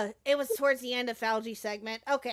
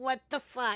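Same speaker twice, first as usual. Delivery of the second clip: mock stunned, shocked disbelief, quieter; 4 dB quieter than usual. Imitating how another speaker just reacted: imitating Julie's shocked reaction. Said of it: "I can hear it in your voice. You're like".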